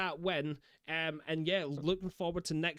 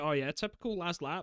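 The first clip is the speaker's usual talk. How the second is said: normal talking voice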